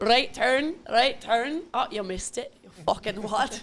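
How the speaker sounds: terrible put-on Scottish accent. Retelling a bit about a Scottish golfer as a GPS voice, bad Scottish accent. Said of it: "worst Scottish accent I think I've ever done".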